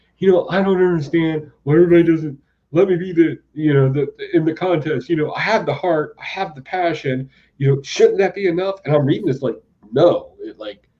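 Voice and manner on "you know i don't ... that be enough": upset, worked up, hurt, aggrieved delivery. Retelling a comic scene where Cypher gets upset: imitating upset Cypher. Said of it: "Cypher's getting all upset, and he's like".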